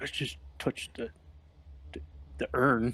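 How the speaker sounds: grumbled, grunting whisper kept under the breath. A player character speaks up about the urn, grunting whisper under breath. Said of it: "grunts and like whispers under his breath".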